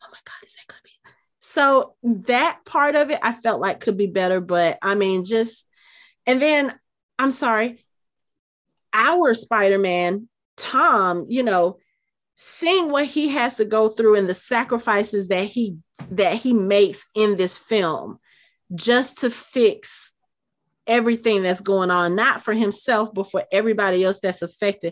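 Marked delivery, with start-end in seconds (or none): 0.0-0.9 soft, hushed, awed whisper. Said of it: "except for whispers like".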